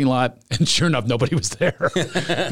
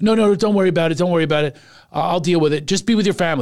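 put-on nervous pleading in a woman's voice; 3 semitones higher than usual. Retelling a woman at a theater telling him not to worry: imitating a nervous woman. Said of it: "she gets nervous".

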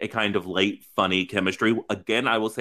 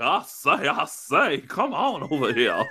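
very slow country drawl, pitch swooping up; 6 semitones higher than usual. Imitating a cartoon rooster to describe a show character: Foghorn Leghorn voice. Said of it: "that is who I believe Aiden to be".

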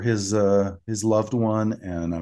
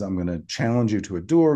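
ordinary delivery

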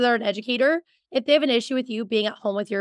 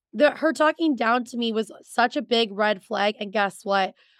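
ordinary talk, nothing marked

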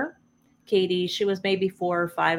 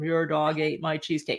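dead-level, toneless, flat monotone delivery; 3 semitones lower, 4 dB quieter than usual. Speaker retells a woman answering Paul, retold monotone. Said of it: "she was all monotone".

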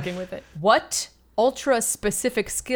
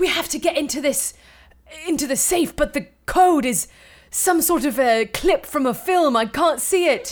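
affected, put-on English accent, pitched up; 7 semitones higher than usual. Acting out imagined bank robbers mid-heist, in an english accent. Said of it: "What accent is that?".

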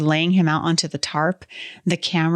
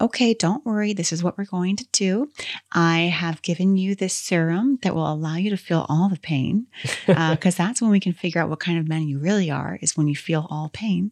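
mock soothing, calming doctor voice. Acting out what a doctor would say while treating someone, mock-soothing doctor voice. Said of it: "soothing, like a doctor would have".

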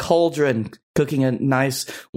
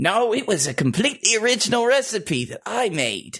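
high, put-on Cockney old woman voice; 8 semitones higher than usual. Answering a question in character, in a cockney accent. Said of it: "I'm starting to get Cockney too".

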